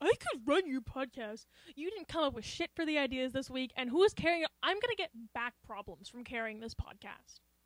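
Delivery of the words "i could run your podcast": mocking boastful imitation, louder. Quoting the other speaker's boast back at him: mocking imitation. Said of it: "So don't be like".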